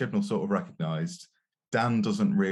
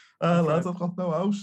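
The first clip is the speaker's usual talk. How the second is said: bad put-on Scouse accent, much higher; 11 semitones higher than usual. Retelling a story to the other speakers, in a bad Scouse accent. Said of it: "Apologies to the entire city of Liverpool".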